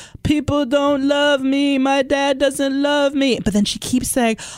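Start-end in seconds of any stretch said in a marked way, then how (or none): 0.2-3.4 very slow, halting, word-searching delivery. Describing a woman at an intervention, speaker quotes her, imitating slow, word-searching speech. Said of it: "she's talking very slow and like she can't find words".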